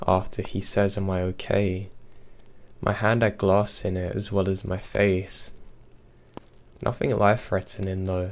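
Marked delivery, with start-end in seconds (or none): none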